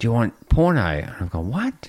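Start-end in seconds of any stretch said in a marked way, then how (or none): 0.0-0.8 shouted at the top of his voice, high and loud. Recounting a man yelling at them on an aircraft of scientists, retelling a yell. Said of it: "he's yelling".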